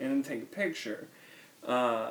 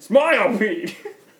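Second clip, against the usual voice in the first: shouted, loud voice; 7 semitones higher, 11 dB louder than usual. Recalling photographing pete beside the pork, the speaker is retelling a yell. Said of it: "But I kept yelling".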